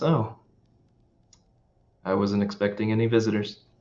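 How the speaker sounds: cocky, smug, smiling. Voicing a woman greeting unexpected visitors at her door: cocky, smiling. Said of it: "with the same wirely, almost cocky smile, she looks at you and says".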